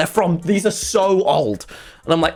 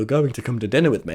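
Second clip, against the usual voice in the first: calm, matter-of-fact, suggestive mind-control style delivery; 7 semitones lower, 3 dB quieter than usual. Retelling a friend's dinner invitation: imitating Wilbur doing an Obi-Wan mind trick. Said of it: "That's what Wilbur does. He goes".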